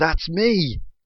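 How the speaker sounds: high, joyful, happy shout. Retelling a wrestler seeing his name on the screen: imitating Apollo Crews shouting. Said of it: "he shouts".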